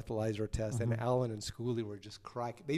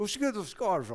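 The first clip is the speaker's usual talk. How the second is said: mock English accent, higher and louder; 9 semitones higher, 6 dB louder than usual. Retelling being pulled over, imitating the cop's English accent. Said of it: "this English accent".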